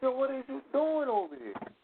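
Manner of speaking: shrieking, very high, shrill scream. Retelling a street encounter he yelled at: imitating his own screaming. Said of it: "I'm screaming on the motherfucker".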